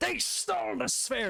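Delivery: shouting. Voicing a many-eyed creature warning about thieves: shouting.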